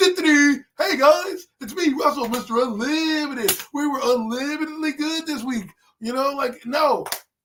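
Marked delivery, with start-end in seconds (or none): 0.0-5.7 slow, chipper, sunny positivity. Contrasting Russell Wilson with emotional Jackson Dart, do a Russell Wilson impression. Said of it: "I need to see emotion".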